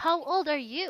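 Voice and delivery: rising question-like tune on final "you". Demonstrating question intonation to a learner, putting the voice higher at the end. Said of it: "put your voice higher, right, at the end".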